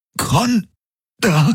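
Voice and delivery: gasped on a high, sudden caught breath. Reading Garlin repeating the word just spoken to them, gasped. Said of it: "keuchte Garlin".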